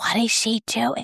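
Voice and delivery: hushed, quiet whisper. Retelling one midwife's question to another while the speaker laughed during birth; whispered question. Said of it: "one midwife whispered to the other".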